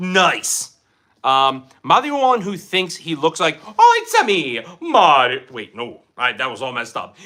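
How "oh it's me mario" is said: slow, swooping, drawn-out cartoon plumber voice. Trying out a character impression mid-conversation: Mario voice. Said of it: "I thought I could do Mario".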